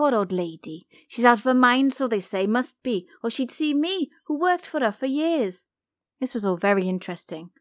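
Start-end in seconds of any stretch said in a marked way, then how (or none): 0.0-3.1 put-on Welsh accent. Quoting the old lady the speaker worked for, in a Welsh accent. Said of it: "Welsh accent or not".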